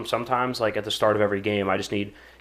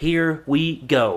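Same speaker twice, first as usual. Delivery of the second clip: high play-by-play commentator call; 5 semitones higher, 4 dB louder than usual. Retelling a kickoff call from an Ohio State game: Gus Johnson voice. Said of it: "and he's".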